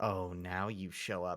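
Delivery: muttered under breath. Retelling a character's reaction to the detective showing up, muttered under breath. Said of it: "kind of under her breath".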